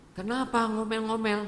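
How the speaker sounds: high-pitched, puzzled voice.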